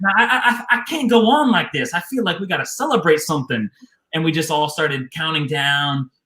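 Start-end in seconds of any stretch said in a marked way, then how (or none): 0.0-3.7 pitched-up Texas southern drawl. Retelling what Marshall said before the countdown, imitating Marshall's southern drawl. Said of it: "He's got this southern drawl".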